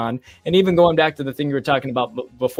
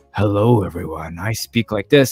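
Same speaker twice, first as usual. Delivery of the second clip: put-on voiceover announcer voice, really deep and slow; 6 semitones lower than usual. Retelling a street bit where a man answers, in a really deep voice. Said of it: "he had like a really deep voice".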